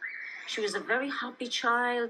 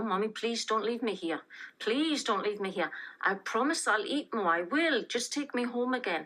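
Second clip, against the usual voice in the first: put-on child voice, desperately pleading. Retelling a daughter's words at being left, imitating a child pleading. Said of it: "She was pleading".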